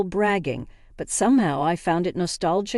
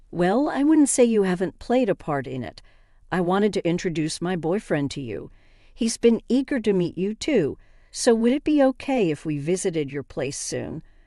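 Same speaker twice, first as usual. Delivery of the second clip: ordinary delivery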